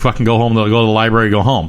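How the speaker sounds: ordinary delivery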